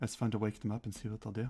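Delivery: soft half-whisper, close to the ear. Voicing a character leaning in to a player: half-whispering in someone's ear. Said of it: "whispers in your ear".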